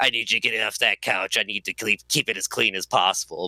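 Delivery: put-on voice of a woman who smokes. Speaker recalls the woman they worked with, imitating Sandy's voice. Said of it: "she talked like this and smoked cigarettes".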